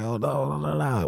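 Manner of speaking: tearful, high crying wail with drawn-out "no". Retelling hearing at work that mom had a stroke, imitating own crying. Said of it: "I'm over there crying and shit".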